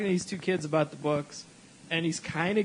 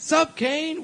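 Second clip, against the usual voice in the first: put-on shout, higher and louder; 10 semitones higher, 4 dB louder than usual. Retelling a friend greeting people: imitating someone yelling. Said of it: "he's yelling".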